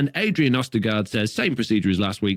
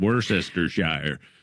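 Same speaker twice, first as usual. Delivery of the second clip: put-on Worcestershire pronounced with an American accent; 5 semitones lower, 4 dB quieter than usual. Retelling how a word was read out: american accent. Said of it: "I said it in how Americans normally say it".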